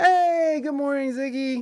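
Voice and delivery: abrupt, sudden, high-pitched shouted yell. Greeting a viewer by name in the middle of reading a tweet: yelling. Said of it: "Sorry, I just yelled at you".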